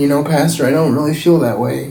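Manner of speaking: usual speaking voice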